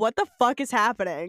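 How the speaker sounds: ordinary talk, nothing marked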